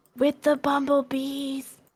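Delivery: whispering. Voicing a character sneaking up to whisper into a sleeper's ear: whisper. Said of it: "whisper in his ear".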